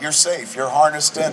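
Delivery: ordinary delivery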